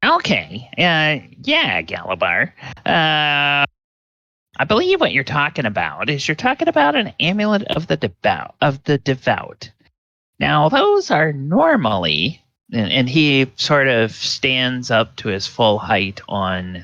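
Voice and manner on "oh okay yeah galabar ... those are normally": quick, high, swooping halfling voice, rattled off. Voicing the halfling Fastenberg who answers Galabar about an amulet: Fastenberg halfling voice. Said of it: "Fastenberg talks like this".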